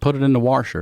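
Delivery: put-on Baltimore accent, "washer" said as "warsher". Retelling being caught saying washer, imitating own old Baltimore accent. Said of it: "there's no R in that".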